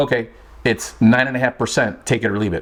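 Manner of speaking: ordinary talk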